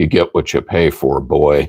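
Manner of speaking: put-on, really deep fatherly voice. Quoting a father's favorite saying, imitating dad's deep voice. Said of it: "in his voice, ... He had a real deep voice".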